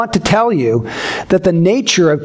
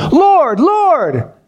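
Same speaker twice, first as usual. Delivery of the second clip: play-acted, full-voiced, loud, high crying out; 8 semitones higher than usual. A speaker acting out people repeating a word for emphasis, imitating a loud cry-out. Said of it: "They're crying out loudly".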